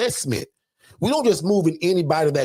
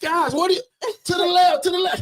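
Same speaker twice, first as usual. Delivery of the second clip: put-on screaming voice, higher; 13 semitones higher than usual. Retelling how someone screams at people moving a couch: imitating Kathy screaming. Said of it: "Kathy's voice screaming at these guys".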